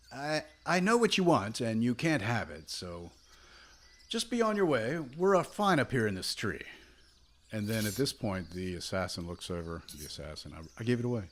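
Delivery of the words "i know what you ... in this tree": high, swooping, high-pitched yelling. Voicing Artis Simber up in a tree, answering a woman below, yelling down. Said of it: "And he yells down".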